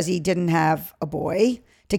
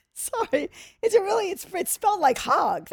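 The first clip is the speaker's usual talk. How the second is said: giggling while talking, higher and quieter; 12 semitones higher, 6 dB quieter than usual. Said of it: "That's why I'm laughing like a ten-year-old".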